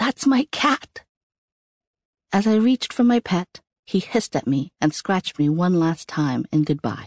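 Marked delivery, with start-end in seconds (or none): 0.0-1.0 high whisper-yell. Narrator as a child protesting when dad takes the cat away, whisper-yell through swollen throat. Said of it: "I whisper yelled through my swollen throat".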